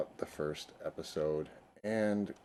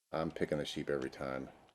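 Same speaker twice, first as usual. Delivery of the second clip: ordinary delivery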